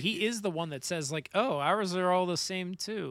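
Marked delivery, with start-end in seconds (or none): 1.3-3.1 mock disappointed tone. Retelling what an anime character says on seeing matching soldiers: imitating a disappointed character. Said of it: "you can hear him disappointed".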